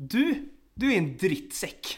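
loud, slow, drawn-out put-on Norwegian accent. Retelling what a drunk man at the bar said to the speaker, imitating norwegian accent. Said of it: "norska går ju inte att ta på allvar".

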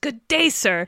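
furious shouting. Retelling the end of a film, imitating Gene Wilder yelling. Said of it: "Gene Wilder yelling".

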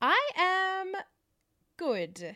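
very high, hesitant, apprehensive voice. Podcast co-host, asked how their week is going, answers apprehensively. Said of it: "That sounded a bit apprehensive".

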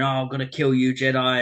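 put-on screaming voice. Retelling a game scene where an enemy flies at you: imitating an enemy screaming. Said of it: "he's screaming".

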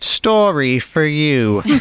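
put-on accent drifting a little British. Introducing a gory story to the group: slightly British accent. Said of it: "That got a little British".

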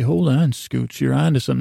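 ordinary talk

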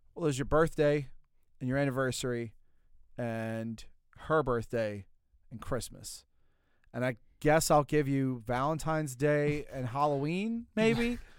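normal talking voice

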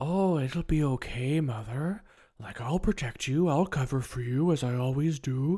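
gloomy, moping delivery. Retelling a scene where Norman speaks to his mother: imitating Norman's Eeyore-like mope. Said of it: "It's kind of Eeyore a bit there".

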